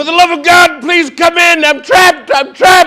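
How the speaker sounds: desperate, high-pitched, loud yelling. Retelling being trapped in bed and calling to the steward, retelling a yell. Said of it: "I'm like yelling at him".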